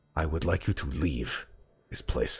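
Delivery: tone growing steadily closer to anger. Voicing a character who tells the listeners to leave: tone growing closer to anger. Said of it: "and his tone begins to uh".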